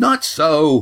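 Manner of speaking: offended, bristling. Cam contradicts Yan during their discussion: indignant. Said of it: "said Cam indignantly".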